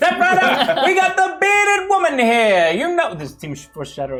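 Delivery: carnival barker voice. Reading patron names as requested: carnival sideshow barker voice. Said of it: "Barker at a carnival sideshow".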